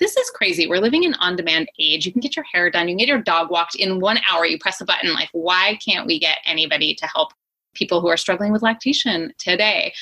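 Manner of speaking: usual speaking voice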